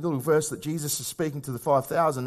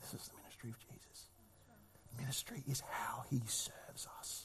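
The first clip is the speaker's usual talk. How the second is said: hushed whisper, much quieter; 3 semitones lower, 22 dB quieter than usual. Preaching to listeners about the meaning of ministry: whispering. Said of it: "I'm whispering it".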